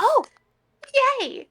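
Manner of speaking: put-on very high childlike squeal of gleeful delight. Retelling how the interim therapist reacted to a diagnosis: imitating a childlike cheer. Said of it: "she clapped her hands like a child".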